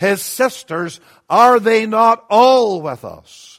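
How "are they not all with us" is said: strong, hard stress on the word "all". Rereading verse 56 aloud to make a point: strong stress on 'all'. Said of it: "And I emphasize the word all".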